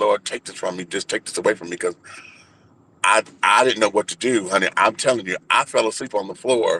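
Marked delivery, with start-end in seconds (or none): 0.0-1.8 mock desperate, tearful, crying voice. Retelling praying on the floor in a corner: imitating own tearful plea. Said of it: "and I'm rocking, and I'm crying".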